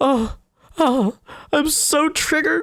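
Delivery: fake sobbing. Mocking a girl in the background of a video, mock-sobbing. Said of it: "[fake sobs]".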